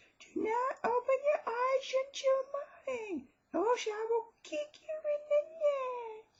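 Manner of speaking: spooky, very high, slow, wailing falsetto.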